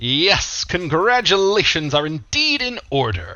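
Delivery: voice ringing out. Voicing a figure whose voice rings out through the room: voice ringing out through room. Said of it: "a voice kind of ring out through the room".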